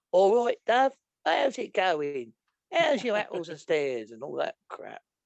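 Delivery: terrible fake Cockney accent, sing-song.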